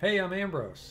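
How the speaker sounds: happy loose Midwestern call. Narrator voices Ambrose greeting you, shouting cheerfully in a loose Midwestern accent. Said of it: "He shouts cheerfully in English, his words piling together in a loose Midwestern accent".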